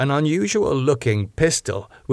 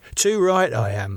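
plain reading voice

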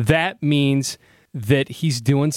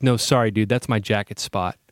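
put-on deadpan, lower pitch; 4 semitones lower than usual. Retelling what a guy at the bar said about his jacket, imitating his deadpan. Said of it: "completely deadpan".

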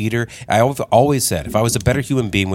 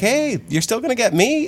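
high, fast, mock cheery tone. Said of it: "I'm like".

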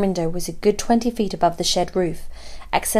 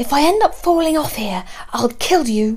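high voice forced through clenched, gritted teeth; 6 semitones higher, 3 dB louder than usual. Climbing a trellis while talking to the narrator, through clenched teeth. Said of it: "she said through clenched teeth".

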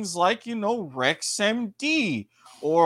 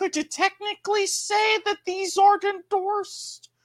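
very high-pitched, lilting rise; 12 semitones higher than usual. Posing a question to the co-host, then naming the delivery: high-pitched questioning voice. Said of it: "Question mark, high-pitched voice".

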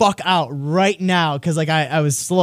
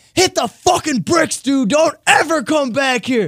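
acted, very high, shrill scream; 9 semitones higher than usual. Retelling how a guy who chased you through his house screamed from his door, retelling a scream. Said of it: "just screams out of his door".

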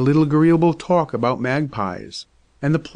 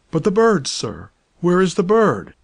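high, startled, urgent exclamation; 5 semitones higher than usual. The doctor, in a dilemma, pressing the father about the missing bird, exclaiming. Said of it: "Exclaimed the doctor".

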